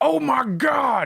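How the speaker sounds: very high, rough, cracking announcer exclamation. Imitating an announcer's catchphrase: Jim Ross impression. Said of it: "that one announcer that was always just".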